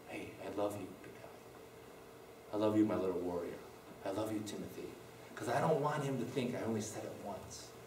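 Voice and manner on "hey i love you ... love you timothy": close, hushed, soft whisper into the ear. Retelling what was said into a child's ear during a hug: imitating a whisper. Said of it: "I whisper in his ear".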